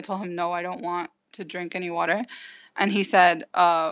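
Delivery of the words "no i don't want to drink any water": put-on crying speech, lower and quieter. Retelling refusing the offered water: retelling a tearful reply. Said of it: "through tears".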